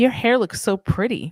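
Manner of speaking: put-on creepy flirty voice. Imitating a coworker talking to a waitress: imitating a creepy coworker.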